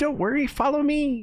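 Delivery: small little voice, very high. Storyteller repeating what a tiny voice from the forest cried out, tiny voice. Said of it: "you hear this really tiny voice cry out".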